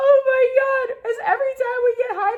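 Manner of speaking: very high, loud laughing wail, crying with laughter.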